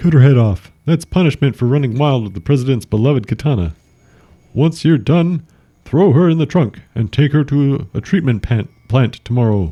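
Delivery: very high, stately, composed, dignified voice. The general manager cuts off a subordinate and repeats his orders, dignified voice. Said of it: "The dignified voice cuts him off and repeats the orders. / The dignified voice cuts him off and repeats the orders".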